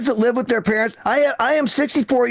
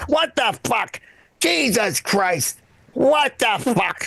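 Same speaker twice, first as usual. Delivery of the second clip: put-on cranky old man voice, slow and drawn-out. Imitating an elderly father-in-law who walks around all day: imitating elderly father-in-law. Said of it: "he goes".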